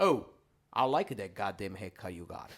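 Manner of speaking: put-on Italian dad voice with Italian accent. Retelling how his father used goddamn as praise: imitating his father. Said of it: "he would go".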